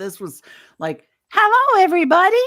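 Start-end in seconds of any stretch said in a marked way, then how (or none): 1.3-2.4 put-on very high, loud, tiny little-girl voice. Retelling a greeting heard over a walkie-talkie, in a little girl's voice. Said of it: "she was just a kid voice there".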